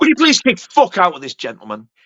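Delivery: ordinary delivery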